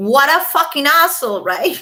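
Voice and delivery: plainly ironic mocking tone. Reacting to a court filing about a gifted kimono: sarcastic. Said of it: "I'm being sarcastic, of course".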